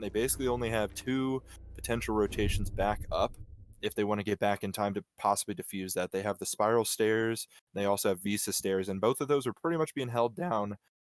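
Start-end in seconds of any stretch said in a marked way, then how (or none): 8.9-10.7 voice breaking mid-sentence. Describing how a team's defense is being held down, voice cracking. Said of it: "I have a terrible voice crack".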